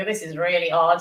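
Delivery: ordinary delivery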